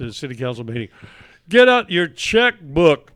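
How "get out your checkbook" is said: very loud, high-pitched screaming. Retelling watching a city council meeting on television: imitating own screaming at tv. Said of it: "I'm screaming at the television".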